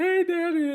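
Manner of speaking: high, squeaky little cartoon creature voice. Retelling how a friend greeted the speaker's dad, Majin Buu voice. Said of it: "He was doing the whole Majin Buu voice".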